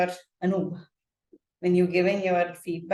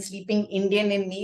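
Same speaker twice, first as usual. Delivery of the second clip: usual speaking voice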